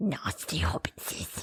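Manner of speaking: whispered, eerie, creepy lurking creature voice. Reacting to a creepy voicemail, the speaker does a Gollum voice. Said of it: "That sounds like Gollum".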